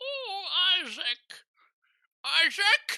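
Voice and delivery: put-on elderly grandmother voice. Calling out the name Isaac: imitating Grandma's voice. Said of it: "but in Grandma's voice".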